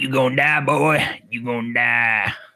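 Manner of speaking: put-on low, New Orleans accent character voice. Teasing the other speaker about how he sounds, doing a New Orleans voodoo priest voice. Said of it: "kind of sound like a voodoo priest, you know, like in New Orleans".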